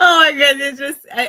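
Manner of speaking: words bursting through a very loud, high laugh. Reacting to a story about wine marketing, big laugh while talking. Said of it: "I'm sorry for my big laugh".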